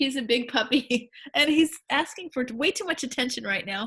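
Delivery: words broken up by laughter.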